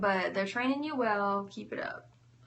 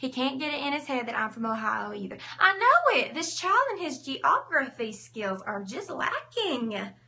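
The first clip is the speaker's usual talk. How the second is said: put-on Southern American accent; 2 semitones higher, 4 dB louder than usual. Showing how a much more southern accent would sound: put-on southern accent. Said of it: "That's my southern accent, y'all".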